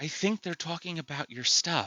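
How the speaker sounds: soft, quick, small feminine voice. Storyteller voicing an unseen figure heard by only one character, in a little feminine voice. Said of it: "A little feminine voice".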